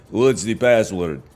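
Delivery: put-on Eastern European accent. Acting out a doorman at a secret back room: eastern european accent. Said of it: "a Eastern European accent says".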